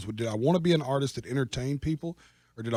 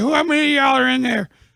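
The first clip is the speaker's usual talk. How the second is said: mock loud, high, wasted blackout-drunk hollering; 14 semitones higher, 11 dB louder than usual. Speaker imitates how they sounded on their Instagram live, imitating own blackout-drunk voice. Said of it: "the just blackoutness in my voice".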